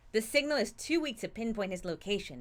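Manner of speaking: plain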